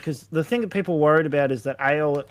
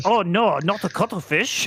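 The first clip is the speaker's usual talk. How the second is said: goofy, cartoonish put-on Japanese accent, high; 5 semitones higher than usual. Retelling a cartoon line in a put-on goofy Japanese voice. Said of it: "his attempt at a goofy Japanese voice".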